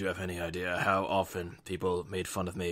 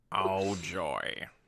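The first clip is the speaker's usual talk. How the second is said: bad put-on grumpy cartoon voice. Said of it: "This is my worst Squidward impression ever".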